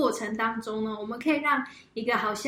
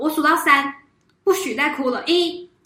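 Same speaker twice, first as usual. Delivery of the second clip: put-on loud, harsh, fierce, angry scolding; 4 semitones higher, 6 dB louder than usual. Describing a mother scolding her crying daughter, the speaker imitates an angry scolding. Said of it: "很生气的、很凶的跟他女儿讲说".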